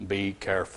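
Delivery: very low, deep, hushed, quiet fatherly voice. Quoting how a father used to say it, the speaker does his deep voice. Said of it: "and he had this deep voice".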